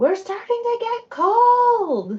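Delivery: very loud, very high booming proclamation. Calling out in character while the group waits outside: booming voice. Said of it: "use a booming voice".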